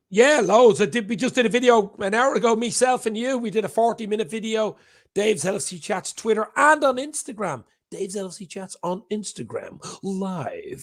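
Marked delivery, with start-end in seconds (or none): 5.2-10.9 mock radio presenter delivery. Guest on a live stream, asked to shout out his channel: radio announcer voice. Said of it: "Do you like that's a radio voice?".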